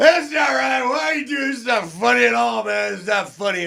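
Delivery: put-on loud, very high-pitched drunk man voice. Retelling a buddy's reaction, imitating a drunk guy. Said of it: "drunk guy voice".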